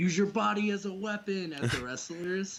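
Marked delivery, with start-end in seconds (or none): 0.0-1.5 put-on shrill, very high, drunken, boozy holler. Retelling yelling at wrestlers while watching a match, retelling a yell. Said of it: "I just yelled like".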